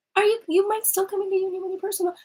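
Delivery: tiny, squeaky mouse voice, very high. Voicing the ego in the back of the mind, squeaky little mouse voice. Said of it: "this little squeaky, like little mouse voice".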